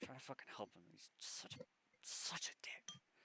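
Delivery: irritated, angry, breathy whisper under the breath. Voicing a character in the scene: angry whisper. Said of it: "kinda whispers a little bit, like, kinda, kinda angrily".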